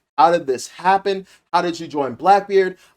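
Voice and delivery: ordinary delivery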